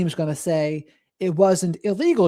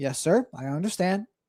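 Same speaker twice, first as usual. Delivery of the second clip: put-on emotionless, unfazed tone with no empathy; 6 dB quieter than usual. Retelling a psychopath's answer to a detective: imitating an emotionless, unfazed reply. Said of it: "he was just so unfazed by the entire thing".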